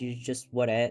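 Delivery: plain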